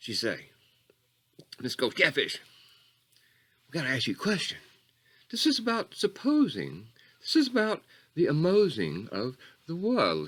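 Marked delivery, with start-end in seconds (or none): 1.6-10.3 put-on, high, ladylike woman's voice. Retelling a question a lady asked: imitating a lady's voice. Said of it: "She sort of talked like that 'cause she's a lady".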